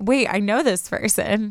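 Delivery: ordinary delivery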